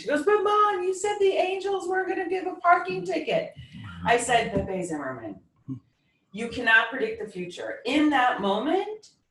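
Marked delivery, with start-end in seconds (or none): 0.2-3.5 mock tearful, sobbing crying in a very high pitch. Retelling her daughter's sobbing call about a parking ticket, imitating crying. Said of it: "she called like sobbing and crying".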